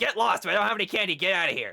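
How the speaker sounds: put-on raspy older woman's voice. Retelling knocking on a door, quoting the older woman behind it: raspy older woman's voice. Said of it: "an older woman's voice, really raspy".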